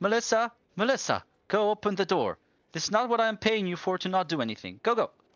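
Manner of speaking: very high, shrill shouting. Voicing a lady in a story who orders her paid help to answer the door, shouting. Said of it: "and starts shouting".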